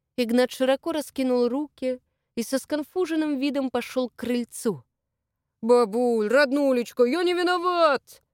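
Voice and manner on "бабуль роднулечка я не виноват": loud proclaiming delivery, pitch climbing. A young man walks up to his grandmother's porch and greets her, loudly. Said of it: "громко сообщил он".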